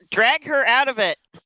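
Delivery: urgent, high-pitched, in-character call. Voicing a character who calls for an ally to be dragged out: character yelling. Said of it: "Yellahi will also yell".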